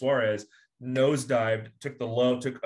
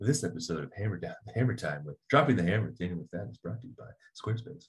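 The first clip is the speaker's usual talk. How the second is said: put-on announcer voice, lower, quieter; 5 semitones lower, 4 dB quieter than usual. Podcast host breaks into a sponsor message in his NPR commercial voice. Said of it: "That's my NPR commercial voice".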